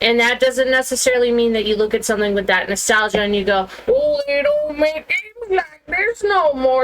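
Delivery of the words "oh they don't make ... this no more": put-on elderly man voice, very high and slow. Voicing a nostalgic gamer's complaint in a put-on old man voice. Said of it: "That's my old man voice".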